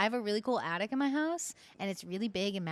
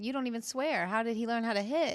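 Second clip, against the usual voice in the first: usual speaking voice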